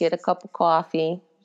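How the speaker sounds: Northeastern accent. Introducing her talk on social media, the speaker tells the audience: slight Northeast accent. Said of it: "doing a little Northeast accent there".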